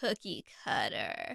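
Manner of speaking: put-on low, slow, soft toddler mumble.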